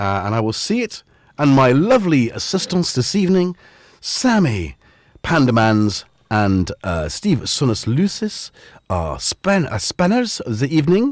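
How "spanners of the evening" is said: high, nasal French accent. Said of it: "I didn't know why I went French".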